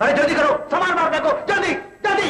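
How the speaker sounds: fast, high-pitched yelling. A seth demanding repayment over a mortgaged house, yelling. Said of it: "क्यों चिल्ला रहे हो सेठ?".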